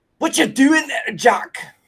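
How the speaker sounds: Scottish character voice. Quoting the Scotsman from Samurai Jack: Scotsman from Samurai Jack voice. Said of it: "the Scotsman from, uh, Samurai Jack".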